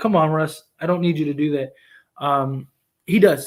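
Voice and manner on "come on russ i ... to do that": normal talking voice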